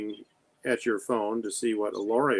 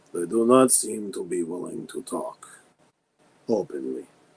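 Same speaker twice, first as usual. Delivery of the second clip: put-on low-pitched voice with European accent slipping through; 5 semitones lower than usual. Speaker in character, trying to sound like Master Splinter; Master Splinter voice drifting European.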